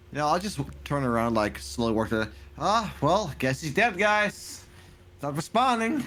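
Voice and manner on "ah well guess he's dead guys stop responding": heavily sarcastic, slow and drawn out. In a game scene, a player speaks in character to the group, super sarcastic. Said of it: "in a super sarcastic tone".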